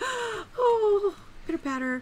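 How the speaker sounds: high-pitched, slow gasp of delight.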